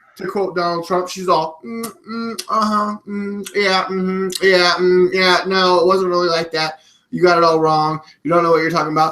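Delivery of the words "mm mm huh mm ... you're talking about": put-on dismissive, bored, uninterested tone. Retelling how she answered the Republicans' questions, imitating feigned boredom. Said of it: "she feigns boredom".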